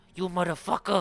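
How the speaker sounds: very loud, bellowing mob-boss yell. Narrating gangsters attacking Sirenhead, one speaks in a Tony Soprano voice. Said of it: "I should do my Tony Soprano".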